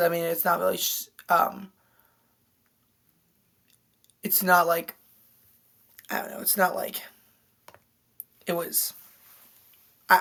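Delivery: stuttering, stammering, tripping over words. Speaker discussing the eighteen sixty-four elections, stuttering. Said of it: "I I'm stuttering".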